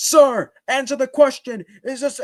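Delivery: very high, shrill, full-throated, top-of-lungs yell. Demonstrating how people yell a question at the top of their voice. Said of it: "yell like at the top of their voice".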